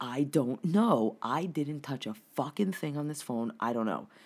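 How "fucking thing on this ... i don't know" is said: normal talking voice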